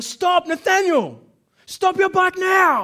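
very loud, slow, booming, drawn-out yell at top of voice. Retelling warning a boy on his bike about a coming car: retelling a shout at full voice. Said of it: "at the top of my voice".

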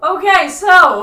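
very loud voice, breaking and cracking. Announcing the next player's turn in a game, voice cracking. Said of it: "Is your voice cracking?".

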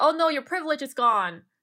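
imitated sarcastic tone. Speaker recounts how others mocked them over the virus, quoting their sarcasm. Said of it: "in a very sarcastic way".

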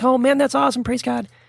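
high, quick, all-excited eager gush. Retelling own past reaction to news that a family friend got saved: imitating own excited reaction. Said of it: "And I was all excited".

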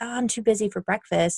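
usual speaking voice

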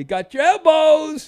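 mock delighted, very high, loud, joyful exclamation. Quoting a man's delighted remark, imitating his joyful voice. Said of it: "the joy in his voice when he said".

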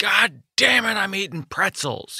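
angry, stretched-out, high blowup. Retelling a joke about a dad who got angry: imitating an angry dad. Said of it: "he would get so angry".

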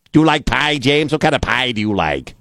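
high, thick Midwestern accent.

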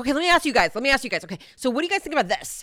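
mock rapid-fire, very fast talking. Retelling how a man addressed the jury, imitating him talking really fast. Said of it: "he was just talking really fast".

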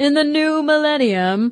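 booming echo voice. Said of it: "I wonder if I can get echo on my voice there".

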